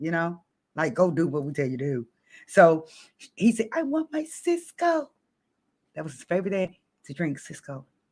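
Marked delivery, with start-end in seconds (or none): 3.7-5.1 very high, slow, drawn-out woman's voice. Telling a story about a man hit in the throat, imitating a womanlike voice. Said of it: "it made his voice change to like a woman's voice".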